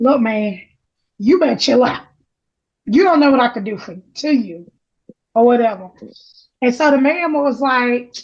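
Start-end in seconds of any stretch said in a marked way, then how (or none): 0.0-5.9 whispered voice. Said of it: "whispering in his ear".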